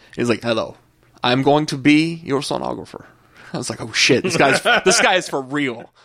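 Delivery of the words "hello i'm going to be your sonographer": put-on strong, thick western European accent. Retelling how a sonographer introduced himself, in a heavy western european accent. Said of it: "He had a really deep accent".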